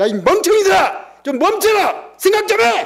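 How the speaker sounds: very high, loud mocking yell.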